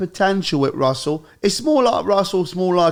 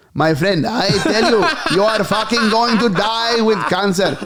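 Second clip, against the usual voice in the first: ordinary talk, nothing marked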